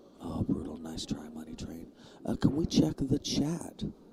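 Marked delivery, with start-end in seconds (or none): 0.2-1.9 soft, hushed whisper. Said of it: "when we're getting quiet, it's because the players are very close".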